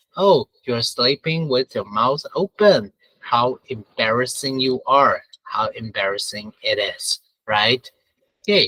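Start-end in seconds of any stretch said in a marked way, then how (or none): none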